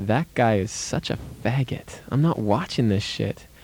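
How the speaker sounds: ordinary talk, nothing marked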